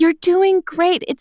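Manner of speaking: put-on pitying, soothing tone. Retelling how a stranger said "you're doing great": imitating pitying reassurance. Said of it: "this stranger is like".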